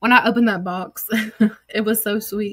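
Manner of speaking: choked-up voice, close to breaking into crying. Showing viewers a gift received for a lost dog: on the verge of tears. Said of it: "I'm about to start crying".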